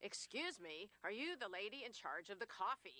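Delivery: very loud, booming voice. Speaker quotes a man who walked up to her at a meeting, very loud voice. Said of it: "in a very loud voice said".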